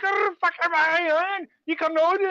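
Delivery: put-on Scottish accent. Retelling a woman's rant at Em: imitating a Scottish accent. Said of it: "she's got, like, a Scottish accent".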